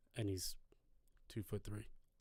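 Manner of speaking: hushed, whispered voice. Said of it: "whispered reveal of height".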